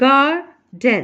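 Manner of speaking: first syllable gar in garden stressed. Teaching english word stress in garden: stress on first syllable gar. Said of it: "जो पहला word है इसका part है जी ए आर गार, उस पर फोर्स देंगे, स्ट्रेस देंगे".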